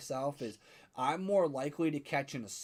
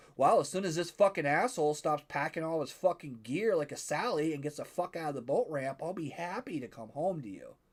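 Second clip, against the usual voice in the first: ordinary delivery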